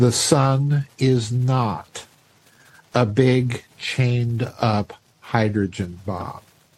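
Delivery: very slow, deliberate, each word spaced. Explaining a hypothesis, the speaker says it very slowly so people latch on. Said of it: "I'm going to say this very slowly".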